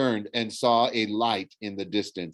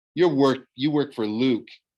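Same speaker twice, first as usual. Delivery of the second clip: ordinary delivery, nothing marked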